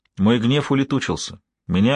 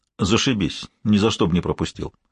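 ordinary delivery

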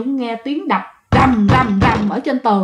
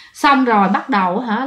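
ordinary delivery

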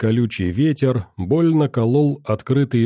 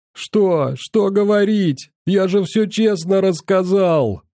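high, terrified, stammering wail; 7 semitones higher than usual. Narrator reads a beaten boy's reply to his attacker, stuttering frightened yell. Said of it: "Заикаясь, испуганным голосом вопил пацан".

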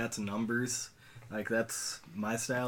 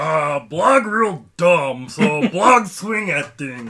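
dumb orc voice, higher and louder; 5 semitones higher, 13 dB louder than usual. Role-playing an orc with three intelligence: dumb orc voice. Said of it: "orcs with, like, three intelligence and role-playing as that".

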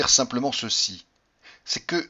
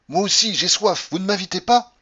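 loud, high, enraged furious outcry; 7 semitones higher, 6 dB louder than usual. Rushing at two people, crying out. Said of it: "en m'écriant".

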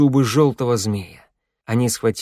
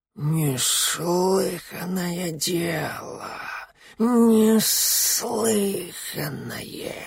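put-on hissing, decrepit old serpent voice; 7 semitones higher, 5 dB quieter than usual. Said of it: "Полос прошипел".

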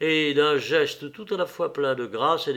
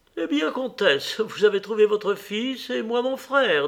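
cheerful, gaily spoken, pitched up; 7 semitones higher than usual. A woman returning to the carriage greets the countess: gaily. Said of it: "dit-elle gaiement".

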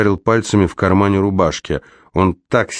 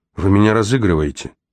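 usual speaking voice

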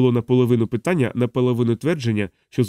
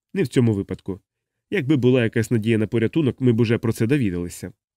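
ordinary delivery, nothing marked

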